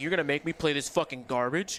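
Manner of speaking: mock furious, angry put-on tone. Retelling what annoyed players on Twitter said: imitating angry players. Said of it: "Everybody was really, really, really pissed. They're like".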